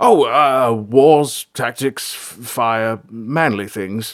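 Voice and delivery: sheepishly. The king answers April's question about their talk, sheepish. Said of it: "said the king sheepishly".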